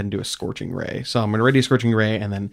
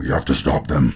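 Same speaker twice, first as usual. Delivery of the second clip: echoing voice like grinding metal; 9 semitones lower, 3 dB louder than usual. Narrator voicing something embedded in the metal speaking from inside: voice like grinding metal. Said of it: "voice echo out from inside of it that sounds a lot like grinding metal".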